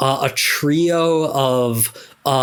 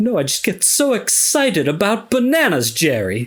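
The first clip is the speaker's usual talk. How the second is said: affected put-on British accent, pitched up; 5 semitones higher than usual. Voicing a genius pet space monkey complaining to Jerry: British accent. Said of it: "he talks with a, a British accent".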